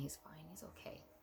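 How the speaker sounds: soft, gentle, reassuring, soothing whisper. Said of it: "And he just kept telling me".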